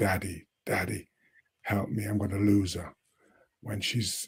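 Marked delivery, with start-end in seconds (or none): none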